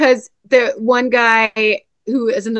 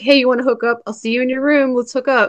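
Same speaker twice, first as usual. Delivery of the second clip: ordinary delivery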